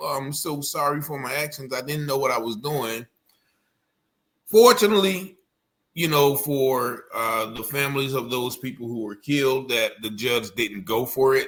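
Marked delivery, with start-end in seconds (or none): 0.0-3.1 quiet, put-on sobbing voice. A commentator mocking a defendant's courtroom crying, mock crying apology as Ryan Michael Bate.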